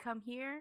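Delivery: voice of a talking pet bird. Picturing a dark house at night and a bird calling: imitating a bird voice. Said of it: "I heard a bird voice say".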